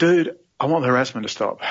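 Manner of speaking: plain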